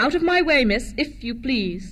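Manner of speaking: snooty, haughty, superior tone. Narrator voicing a character ordering a girl out of her way, haughty. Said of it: "said a haughty voice behind her".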